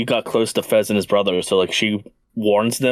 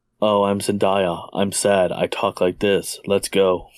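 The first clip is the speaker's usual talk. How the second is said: slow, flat, mocking monotone drone. Mocking an actor for playing the same role: monotone Zendaya impression.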